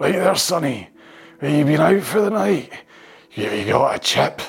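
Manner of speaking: put-on loud, drunk man's voice, Glasgow accent. Doing impressions, the speaker switches to a drunk glasgow man impression. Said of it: "That's more my drunk in the corner of Socky Hall Street".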